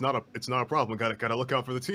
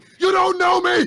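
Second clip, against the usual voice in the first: very high, loud, yappy, snarling angry bark; 14 dB louder than usual. Playing a character who turns on a hat rack: barking angrily. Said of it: "starts barking at it like".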